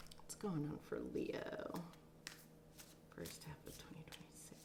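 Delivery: soft, hushed, whispered murmur.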